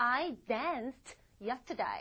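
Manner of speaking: "danced" pronounced with final t, slow and careful.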